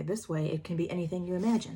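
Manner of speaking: ordinary delivery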